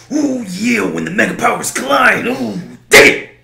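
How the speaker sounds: put-on high, loud, growling belted voice. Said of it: "what you turn on Macho Man".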